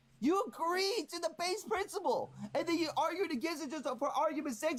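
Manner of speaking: furious shouting. Arguing with another speaker about an amendment, yelling angrily. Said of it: "you just keep yelling".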